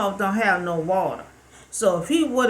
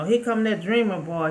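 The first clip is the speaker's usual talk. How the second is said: ordinary talk, nothing marked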